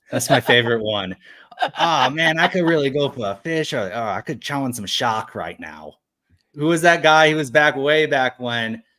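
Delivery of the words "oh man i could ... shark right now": put-on Boston accent. Asked to do a little Jake, Jake's Boston accent. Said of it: "my favorite Boston accent moments".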